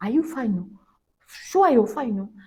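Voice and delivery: tough, very loud tone. Retelling how locals checked on her, imitating a tough tone. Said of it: "the tone of voice that I was not used to".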